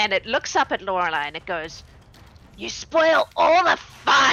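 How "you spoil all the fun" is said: croaky gremlin voice, higher, louder, slower. A fiend looks up at Lorelei and speaks in a croaky gremlinish voice. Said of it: "croaky and gremlinish".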